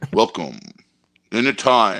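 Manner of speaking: put-on 80s movie trailer announcer voice. Friends wish a new trailer had been done 80s style, doing the 80s movie trailer voice. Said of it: "With the old voice".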